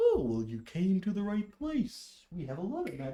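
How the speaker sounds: swooping, animated, bear-like creature voice. Voicing a furbolg who greets the player: voicing a furbolg character. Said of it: "But he kinda just like".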